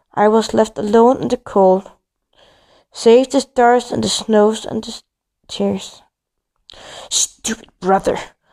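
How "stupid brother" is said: grumbling mutter under the breath. Left alone in the cold, the narrator speaks while kicking the ice, muttered. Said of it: "I muttered".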